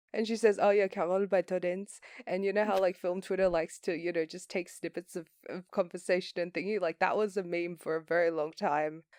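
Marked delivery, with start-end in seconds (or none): 0.7-2.0 French-accented impression. Quoting an actress naming a favorite film in an interview, Adèle Haenel impression. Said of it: "I was imitating Adele Haenel".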